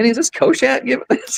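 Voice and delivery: mock astonished voice.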